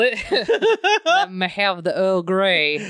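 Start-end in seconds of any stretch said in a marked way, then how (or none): 1.0-2.9 slow put-on voice with laughing. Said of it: "almost Morgan Freeman-esque".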